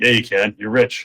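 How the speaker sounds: ordinary delivery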